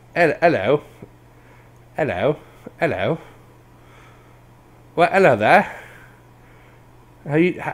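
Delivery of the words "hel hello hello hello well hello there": failed, awful British accent attempt. Trying a British accent after a request to: bad British accent. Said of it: "Try to speak with a British accent".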